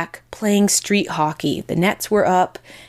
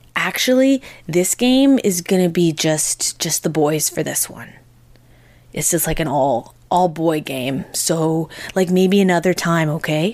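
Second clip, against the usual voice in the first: gentle, kindly, soft voice; 2 semitones lower than usual. Retelling how a boy turned her away from the game: imitating a soft voice. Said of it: "in, like, a soft voice".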